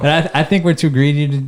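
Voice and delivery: ordinary talk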